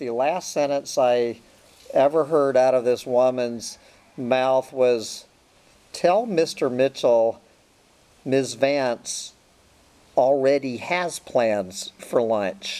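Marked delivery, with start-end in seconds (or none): 5.9-12.8 sarcastic, dismissive tone in every word. Retelling an ex-wife's reply to a lunch invitation: imitating a sarcastic voice. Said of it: "sarcastic, uh, voice".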